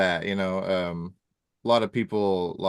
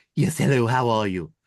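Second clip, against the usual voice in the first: loud, belted put-on cartoon character voice; 4 semitones higher, 5 dB louder than usual. Showing the cartoon voices they can do, in a Stewie Griffin voice. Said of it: "I could do go into a little bit of Stewie, Stewie Griffin".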